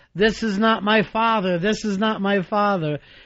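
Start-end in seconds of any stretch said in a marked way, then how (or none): none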